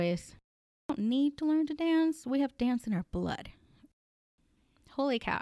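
choked-up, teary voice, emotion welling up. Talking about Colombians having dance in their blood, getting teary. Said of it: "I don't know why I'm starting to get teary".

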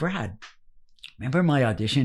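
ordinary talk

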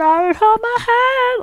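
botched woman's voice, very high, very slow, drawn-out. Attempting an impression of a recognisable woman: failed impression of a woman. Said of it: "I can't do an impression of her".

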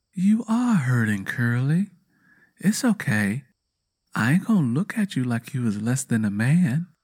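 sweet, soft whisper. Catching up to a man who is hurting, a woman reassures him, whispered sweetly. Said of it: "[name] whispered sweetly".

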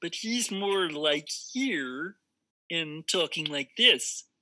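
bubbly frog puppet voice. Demonstrating Muppet voices in conversation, show how Kermit talks in his bubble voice. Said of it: "Kermit also has a similar kind of bubble voice".

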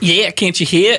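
bad, fake put-on Australian accent. Asked about the accent, showing it off in a bad Australian accent. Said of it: "caught a really bad Australian accent".

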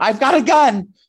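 put-on, very high, loud scream. Telling others how he searched the place, retelling a scream. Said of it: "I screamed".

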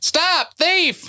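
shouting. A player in a roleplaying game says what their character does, yelling out. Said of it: "What I do yell out is".

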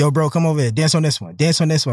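ordinary delivery

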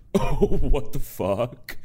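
loud, very drawn-out laughing exclamation. Acting out how Sudie Green's college roommate laughed: imitated laugh through the words. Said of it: "the way she laughed was to go like this".

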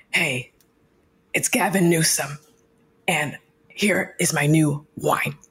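breathy put-on superhero-type voice. Showing an Instagram story bit unveiling a wine collection: breathy Gavin Newsom voice. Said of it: "he's very, like, very breathy".

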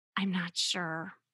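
very soft, hushed, quiet voice. Retelling a phone call, the speaker quotes a woman's reply after a long pause, imitating a really soft voice. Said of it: "responded in a really soft voice".

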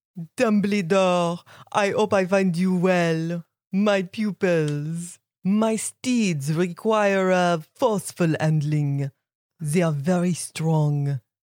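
slow, stately lady's voice with French accent.

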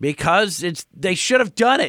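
shouting. Arguing with the co-host about a name: yelling. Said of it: "Why are you yelling at me?".

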